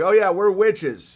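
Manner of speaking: sarcastic, not meant seriously. Retelling what great aunts said while healing with herbs: imitating a sarcastic remark. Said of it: "they were sarcastically like".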